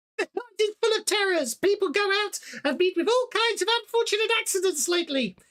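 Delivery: squeaky, very high, mocking, taunting sneer. Narrating the scene, the storyteller voices an old man sneering at you in a high-pitched, mocking tone. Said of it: "speaks in a high-pitched, mocking tone".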